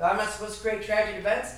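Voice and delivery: ordinary talk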